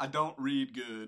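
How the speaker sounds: bad put-on Southern accent. Putting on a movie character's voice for a listener, in a terrible Forrest Gump accent. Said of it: "That's terrible".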